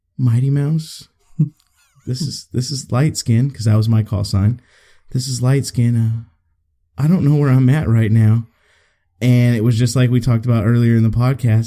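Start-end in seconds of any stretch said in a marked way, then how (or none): 0.2-8.5 put-on scared, timid voice. Retelling a radio call after getting lost in a convoy: imitating own scared timid voice. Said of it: "in a very scared and timid voice".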